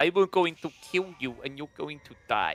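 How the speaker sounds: put-on babyish toddler voice. Voicing the baby arms in Dark Age Men at Arms: baby voice. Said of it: "So you got to do like a baby voice".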